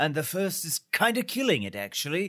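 put-on British accent. Imitating a character recapped from the show, in a british accent. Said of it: "Is that how he says it in his British accent?".

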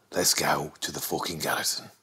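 very quiet, murmured Birmingham accent. Showing off regional accent impressions: Arthur from Peaky Blinders impression. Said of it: "That's Arthur from Peaky Blinders".

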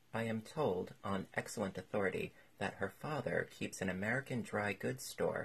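ordinary talk

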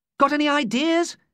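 high-pitched, desperate tone. Tommy, with Zarella's ship gaining on them, asks Ada for ideas, desperate. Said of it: "He said desperately".

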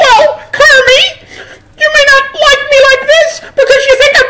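very high, loud, full diva voice. Performer does an impression on an audience-suggested topic, in a Miss Piggy voice. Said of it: "can I have a suggestion of something unusual for Miss Piggy".

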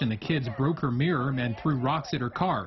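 ordinary talk

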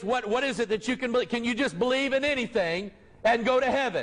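plain

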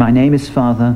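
ordinary delivery

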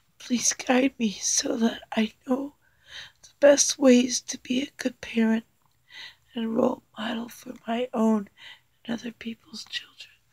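soft, tearful reading voice, crying. Reading a prayer aloud during a card reading, through tears. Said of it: "Please forgive my crying".

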